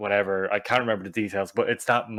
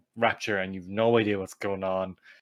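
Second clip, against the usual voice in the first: ordinary talk, nothing marked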